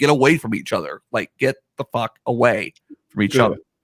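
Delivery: ordinary delivery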